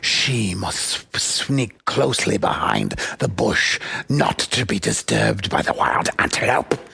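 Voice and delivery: low, hushed nature-documentary narrator whisper. Retelling how he narrates a female animal crawling through, nature-documentary narrator whisper. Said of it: "he'd whisper through the whole thing".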